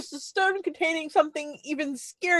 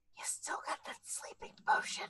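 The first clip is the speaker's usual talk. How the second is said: very soft whisper. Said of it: "whisper to Rhea".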